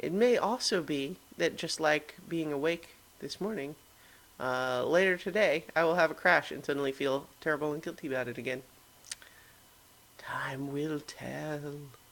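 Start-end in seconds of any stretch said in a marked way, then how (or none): 10.2-11.7 eerie, ghostly, hushed spooky delivery. Closing a daily talk before signing off, in a spooky voice. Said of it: "I said it in a spooky voice".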